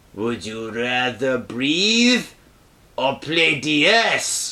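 very low, slow, sinister villain voice. Retelling a true story, quoting a mother's reply to her son; evil voice. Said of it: "No, that's my evil voice".

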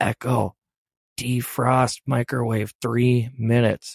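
mock whispering. Retelling trying to command a nearby Echo quietly: retelling a whisper to Echo. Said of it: "And I'm all whispering".

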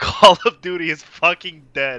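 sudden loud, high blurted outburst. Retelling someone suddenly breaking the silence: retelling a loud outburst. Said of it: "really loudly goes".

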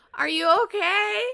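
very high-pitched, loud yelling. Retelling how an old man at the streetcar called across the street; imitating someone yelling. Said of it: "yelling at me across the street".

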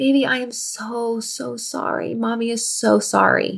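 slow, heartbroken, weeping, sobbing voice. Retelling apologizing to a scared child: retelling sobbing apology. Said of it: "began to sob with him".

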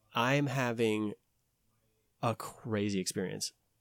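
ordinary talk

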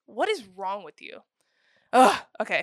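heated, worked-up, loud swooping outburst. Reacting in disbelief to how others read a movie: heated. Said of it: "I'm getting a little heated over here".

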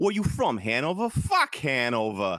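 very bad, exaggerated Boston accent.

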